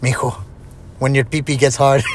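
heavy, exaggerated Mexican accent. Imitating his dad giving him a talk in middle school, exaggerated mexican accent. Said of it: "I gotta make it sound like, for the listeners, you know, because my dad Mexican".

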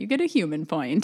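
usual speaking voice

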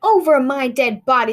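loud, very slow, drawn-out shout. The prince's father shouts at his son inside the house: shouting. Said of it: "the prince's father was shouting".

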